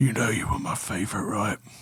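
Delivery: close, hushed, soft half-whisper. Narrating a scene as a character leans over your shoulder: half-whispering into your ear. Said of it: "he whispers into your ear and goes".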